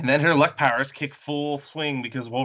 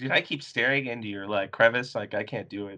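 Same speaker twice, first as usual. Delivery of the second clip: plain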